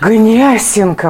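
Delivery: Гнесинка said breathily, with reverence and awe. Showing how people always pronounce the school name Gnesinka: breathy, reverent. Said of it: "все же говорят с придыхом. Гнесинка, вот так".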